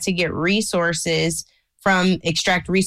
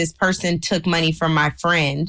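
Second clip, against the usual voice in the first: plain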